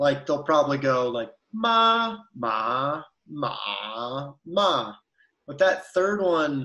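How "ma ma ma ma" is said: ma said slowly in all four Mandarin tones. Explaining how recorded examples illustrate the tones: four mandarin tones in turn. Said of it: "a pronunciation that someone has recorded to illustrate the tone".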